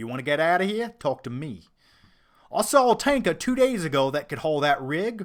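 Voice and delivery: loud bad Australian accent. Praising Mel Gibson as Mad Max, quoting lines: bad Australian accent as Mad Max. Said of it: "You guys know my Australian accents are shit".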